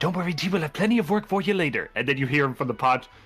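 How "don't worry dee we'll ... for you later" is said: whispering. Voicing a character whispering to a smoke deity in a pot: whispering. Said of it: "he whispers into the pot".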